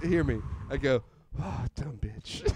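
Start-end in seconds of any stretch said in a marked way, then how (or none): 1.4-2.4 soft, muttered under the breath. Retelling a muttered insult: retelling a muttered insult. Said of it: "under my breath".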